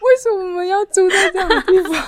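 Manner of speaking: very high, loud sobbing, crying wail. Retelling how he started crying about where they were staying, imitating someone crying. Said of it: "结果他就开始哭了".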